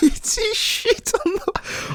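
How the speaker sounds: talking through laughter. Telling a funny story, laughing while talking. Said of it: "I'm sorry for all that laughter".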